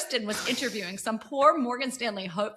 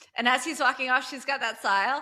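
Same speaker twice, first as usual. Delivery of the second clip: ordinary talk, nothing marked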